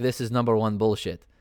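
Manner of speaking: ordinary talk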